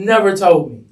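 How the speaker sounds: normal talking voice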